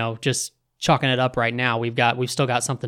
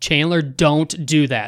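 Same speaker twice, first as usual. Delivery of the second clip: put-on yell, higher and louder; 3 semitones higher, 4 dB louder than usual. Retelling yelling at the TV during a fight: imitating own yelling. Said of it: "I'm yelling at the T V saying".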